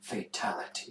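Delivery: breathy, very hushed whisper, barely audible. Joking about what a partner should say after sex: mock whisper. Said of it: "just whispering at you".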